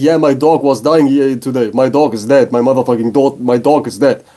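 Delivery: put-on crying, words broken up by weeping. Retelling what a French teacher said in class: imitating a crying teacher. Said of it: "she started crying".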